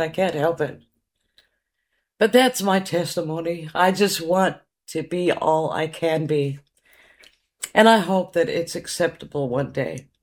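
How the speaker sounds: words spoken while weeping, tearful. Speaker sharing a personal testimony, crying. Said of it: "I'm crying again".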